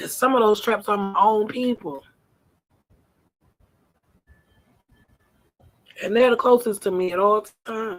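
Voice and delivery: tearful voice, speaking through tears. Mid-talk, later apologizing for crying; crying while speaking. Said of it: "Forgive me for crying".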